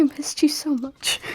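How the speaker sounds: hushed, whispered delivery. Speaking in character while melting into a hug: whispering. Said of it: "like, whisper".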